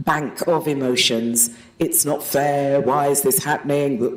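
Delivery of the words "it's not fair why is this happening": ordinary talk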